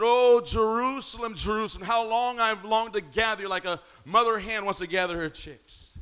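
normal talking voice

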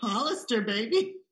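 line breaking up into laughter while speaking. Naming another speaker's answer to a question: laughing while talking. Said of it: "couldn't even get it out without laughing".

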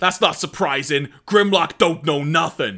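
put-on rough New York accent, leaned into. Recounting a scene where Headstrong answers Grimlock, in Headstrong's New York accent. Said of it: "kind of got a New York style accent, which I'll try and replicate".

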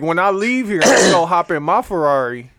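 breezy, carefree, untouchable, privileged-sounding voice.

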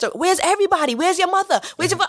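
put-on angry demanding voice. Retelling the other woman's reaction on the phone, acting out her anger. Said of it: "she's mad".

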